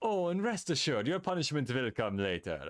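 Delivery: put-on German accent on every word. Showing a German accent for a game character's line: German accent. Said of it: "I could do a German accent".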